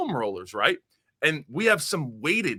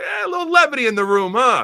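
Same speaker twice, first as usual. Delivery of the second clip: very high, loud, wisecracking joking tone; 10 semitones higher, 8 dB louder than usual. Retelling a coach's joke in the room: imitating a coach joking. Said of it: "crack a joke".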